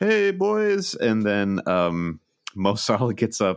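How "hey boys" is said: very high, squeaky, cartoonish character voice. Retelling Liverpool's team Zoom call, acting out each person: imitating Virgil van Dijk. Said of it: "Nutty Professor style, like, one-man play".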